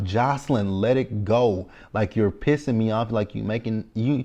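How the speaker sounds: ordinary talk, nothing marked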